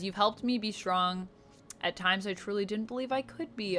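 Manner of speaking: ordinary talk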